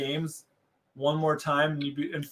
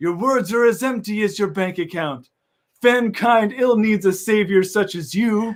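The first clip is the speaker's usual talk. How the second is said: heroic, high, booming, full-throated voice; 5 semitones higher, 8 dB louder than usual. Trading lines in a scene, the speaker voices the retort: Richter voice. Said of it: "I'm doing Richter's voice".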